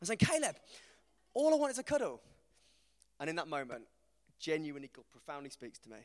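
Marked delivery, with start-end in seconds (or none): 0.2-2.2 play-acted, really angry, very high raised voice. Retelling asking a child for a cuddle: retelling own angry words. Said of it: "I'm getting really angry at this point".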